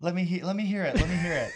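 rough high put-on voice. Imitating a guest's voice after being asked to let others hear it: imitating Meredith's voice. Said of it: "I could dial in in Meredith's voice".

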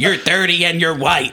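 loud, evil roar breaking into a shriek. Narrating a story, the foul ruler of the new lands speaks: Nicolosi's evil shrieking roar. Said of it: "with an evil roar, it shrieked".

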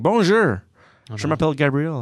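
put-on French spoken with a noticeable English accent. Speaker acts out greeting his parents in french, with an english accent. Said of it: "It's just speaking French with an English accent".

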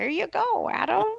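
very high, raspy, creaky little elf voice. Joking that the desk was delivered by North Pole elves, handing it over: elf impression. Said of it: "That was my elf impression".

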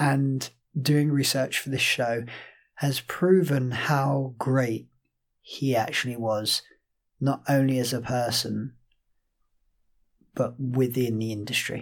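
grave, subdued, solemn tone. Podcast host on losing a musical theatre great, to co-host, somber tone. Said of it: "As you can probably hear from our voices".

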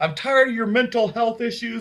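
a loud yell. Retelling how a sister yelled at the speaker: imitating sister yelling. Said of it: "my sister started yelling at me".

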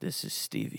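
creepy, breathy, sensual near-whisper. A new co-host gives their name to the viewers, nice and sensual. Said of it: "Why'd you say so creepy?".

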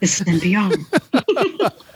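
very soothing, lilting, close-mic radio announcer voice. Mocking how radio stories sound, the speaker does a soothing NPR voice. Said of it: "in a very soothing voice".

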